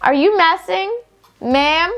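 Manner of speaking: snappish, sarcastic tone. Showing the tone they use when being snippy to someone: snippy tone. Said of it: "it's literally gonna be in this tone".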